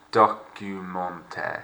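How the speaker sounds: slow, unhurried documentary narration, lingering on each syllable. Showing how to say a word correctly, slow and unhurried. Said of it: "Notice how I'm not rushing".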